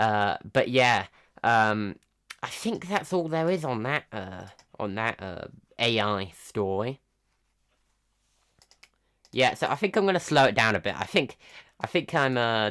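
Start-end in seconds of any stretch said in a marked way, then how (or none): 9.3-10.9 rushed, fast-paced, slightly too fast. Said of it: "talking a bit too fast here".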